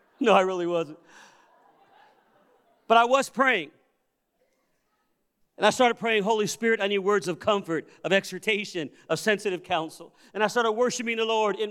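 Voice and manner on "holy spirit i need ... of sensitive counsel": ordinary talk, nothing marked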